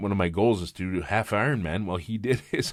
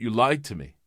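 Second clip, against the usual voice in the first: mock grave, dead-serious, sudden tone; 3 semitones higher than usual. Retelling how she suddenly accused the speaker: imitating a very serious tone.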